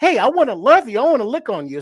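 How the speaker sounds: loud, sing-song, excitable eager dog voice. Comparing cats and dogs, voicing what a dog would say: voicing a dog. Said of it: "And it's like a dog".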